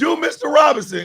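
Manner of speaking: mock very high, loud heckling shout. Retelling a woman in the crowd calling out a request: imitating a woman yelling out. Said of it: "Some woman in the crowd yells out".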